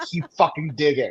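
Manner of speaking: imitated fifty-year-old man's voice. Retelling what a stranger said in a game: imitating a grown man's voice. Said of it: "He sounded like a grown-ass, like, fifty-year-old man".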